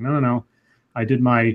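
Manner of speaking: normal talking voice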